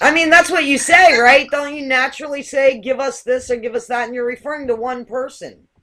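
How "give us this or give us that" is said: usual speaking voice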